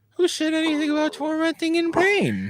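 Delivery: sudden octave jump up to very high pitch. Answering another speaker, the speaker's voice jumps up an octave. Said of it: "Your voice went up an octave there".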